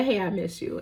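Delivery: playful, flirty come-on tone. Retelling a scene where a character flirts again: imitating flirting. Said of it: "And she flirts again".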